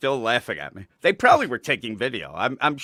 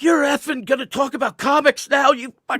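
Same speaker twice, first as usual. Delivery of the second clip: very high, shrill, raised screaming rant; 5 dB louder than usual. Retelling a woman yelling at him as he leaves for a video call, imitating someone screaming. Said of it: "And she just started screaming".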